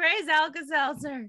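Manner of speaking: loud shout in character voice. Playing a character yelling at another character: in-character yell. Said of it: "I'm just gonna yell at him in Infernal".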